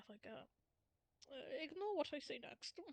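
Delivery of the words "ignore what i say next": quiet mutter under the breath. A character, adjusting his suit, speaks to the group: muttering under breath. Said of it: "he mutters towards the group, just under his breath".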